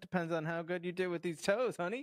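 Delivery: put-on terrible, inconsistent, high-pitched Southern accent. Retelling a scene where a woman teases a man, in a terrible Southern accent. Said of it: "in her like just terrible and inconsistent Southern accent".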